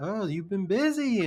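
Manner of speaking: mocking, over-the-top, slow, high taunting drawl. Retelling how Higgs taunts Sam: imitating Higgs taunting. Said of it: "taunting Sam".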